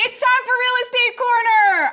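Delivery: very high, loud yell. Announcing a favorite segment of the show: yelling. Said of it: "I'm sorry for yelling".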